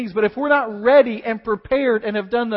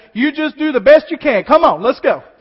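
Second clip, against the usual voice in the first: put-on yelling, louder; 3 semitones higher, 7 dB louder than usual. Retelling how an overzealous amener in the front row interrupted: imitating someone yelling out. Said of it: "just yelled out".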